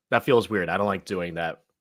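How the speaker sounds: ordinary delivery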